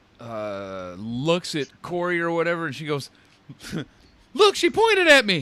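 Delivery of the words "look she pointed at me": really high, very loud, shrill voice. Retelling what a winner said after the match; really high voice. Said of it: "in like a really high voice".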